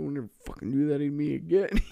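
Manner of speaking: hushed, quiet under-breath mutter. Imagining the kid's reaction to a snake bite, imitating a mutter under breath. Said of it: "he's probably under his breath going".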